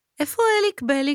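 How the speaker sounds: thin, high, piping voice. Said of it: "שאלה יעלי בקול דק".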